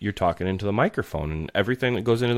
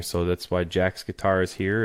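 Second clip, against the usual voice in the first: ordinary talk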